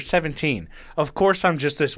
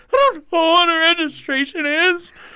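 very high, slow voice on the verge of tears; 5 dB louder than usual. Retelling a traffic stop, quoting own past words: imitating own tearful voice. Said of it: "starting to tear up".

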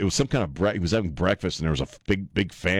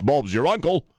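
put-on terrible British accent, pitched higher; 7 semitones higher than usual. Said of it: "doing the worst British accent ever".

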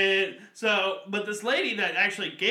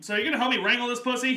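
put-on loud voice, pitched higher; 3 semitones higher than usual. Retelling own words said to Jeff: retelling own loud line. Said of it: "I say it very loudly".

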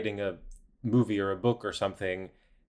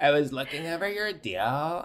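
creaky vocal fry dragged through the words, pitched up; 6 semitones higher than usual. Doing an impression of Doug talking with vocal fry. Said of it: "That's my impression of Doug".

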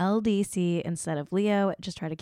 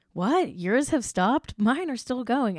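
annoyed and put-out, higher-pitched voice; 5 semitones higher, 3 dB louder than usual. Retelling an interview moment, imitating annoyed Brad Pitt. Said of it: "you can kind of hear Brad Pitt getting annoyed".

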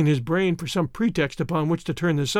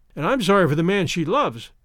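usual speaking voice

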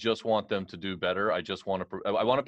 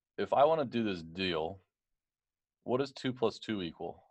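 softly spoken, quiet, low-key voice. Retelling a billionaire's question during the negotiations: imitating someone speaking quietly. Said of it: "real quietly".

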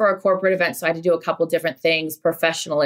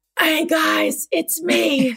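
rough, scratchy, high-pitched voice; 10 semitones higher than usual. A podcast host returns and greets the listeners in a scratchy voice. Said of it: "the voice is still scratchy".

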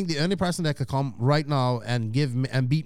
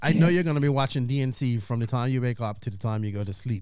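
usual speaking voice

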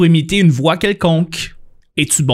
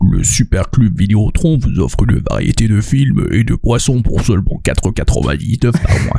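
very low, deep commercial pitchman announcer voice; 7 semitones lower than usual. Showing off an impression, doing the Superclub Vidéotron ad announcer voice. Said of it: "moi je suis capable d'imiter le gars qui faisait les pubs du Superclub Vidéotron".

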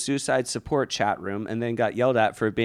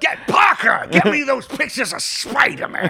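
shrill, very high, loud, bossy yelling; 6 dB louder than usual. Acting out the newspaper chief demanding Spider-Man pictures: J. Jonah Jameson voice. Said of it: "J. Jonah Jameson".

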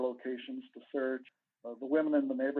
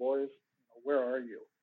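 hushed, quicker speech. Recalling visits to the boys' memorial on Lover's Leap, retelling quietly saying it. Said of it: "just quietly say".

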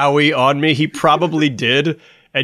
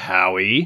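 scornful, belittling, derisive mocking tone; 6 semitones lower, 3 dB quieter than usual. Showing how the name can sound, a derisive 'Howie'. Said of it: "it's really easy to be like, Howie. Like, that sounds derisive".

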